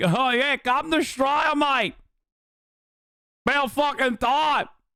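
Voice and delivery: breezy, put-on Australian accent. Imitating Aussies inviting him over: put-on Australian accent. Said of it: "Worst accent?".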